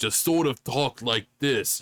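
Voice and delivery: put-on stock Brooklyn accent. Demonstrating how the other cartoon voices talk, stereotypical Brooklyn accent. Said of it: "just sort of a stereotypical Brooklyn accent".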